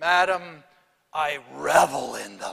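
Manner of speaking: gravelly, rough voice. Retelling a poet's reply to an audience question: Robert Frost gravelly voice. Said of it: "in his trademark gravelly voice".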